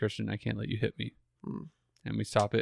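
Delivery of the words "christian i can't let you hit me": calm, even voice, much quieter. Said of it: "I just try in like really calm voice to just say".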